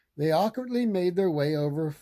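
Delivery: ordinary delivery, nothing marked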